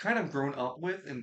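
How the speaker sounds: ordinary delivery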